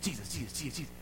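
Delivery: rapid-fire soft repetition at top speed. Speaking to the devil, saying it ten times, really fast. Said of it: "10 times real fast".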